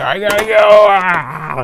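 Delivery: high, loud, panicked yell, freaking out. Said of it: "if Triclops is freaking out, he's like".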